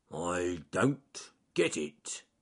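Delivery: growly bear voice, growled to oneself. Reading a story aloud, voicing the bear speaking to himself: Charles Growly Bear growling. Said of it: "he growled to himself".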